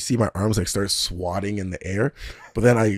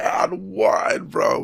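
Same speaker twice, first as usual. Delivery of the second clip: acted scream, much higher; 11 semitones higher than usual. A player retelling what he screamed after scoring, retelling his own scream. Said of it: "I was just screaming".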